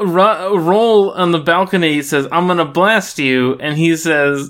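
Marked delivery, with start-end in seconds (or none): none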